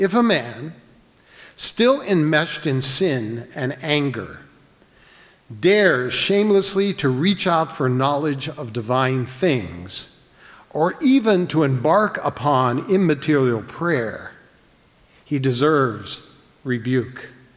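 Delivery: careful, slow, deliberate read-aloud delivery. Speaker reads a short old text aloud to listeners, reading slowly. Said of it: "so I'll read it slowly".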